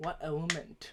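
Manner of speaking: hushed whisper, close into the ear. Playing a character who leans in to ask another: whispering in character. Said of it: "I whisper to your ears".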